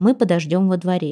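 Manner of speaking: ordinary delivery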